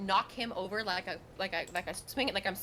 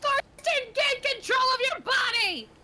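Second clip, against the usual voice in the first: very high, very slow, drawn-out shout; 7 dB louder than usual. Calling to a character while running through the ballroom: shouting. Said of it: "I shout".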